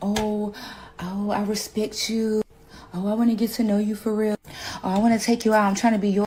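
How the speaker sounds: put-on simpering, fawning voice. Imitating guys who fawn instead of buying: mocking a fawning guy. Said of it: "and you're like".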